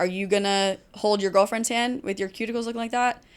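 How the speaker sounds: normal talking voice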